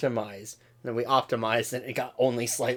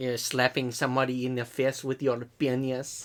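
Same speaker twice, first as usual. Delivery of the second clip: clumsy, bad, failing attempt at French accent. Joking with another speaker about a crude remark: bad french accent. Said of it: "Trying to imitate a French accent and failing miserably".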